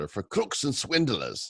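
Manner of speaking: put-on Scottish landowner accent. Quoting a painter's remark on NFTs: Scottish landowner accent. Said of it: "say that like the Scottish landowner".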